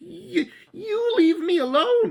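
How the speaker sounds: very high, slow, timid, squeaky goblin voice. Reading a story aloud, the frightened little goblin speaks in squeaky goblin voice. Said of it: "he squeaked".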